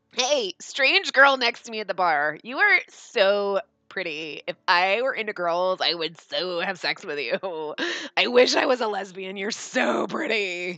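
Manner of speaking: put-on drunk girl voice, tipsy and gushing. Imitating a drunk girl gushing at a stranger at the bar: imitating drunk girls. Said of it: "That's girls that are drunk".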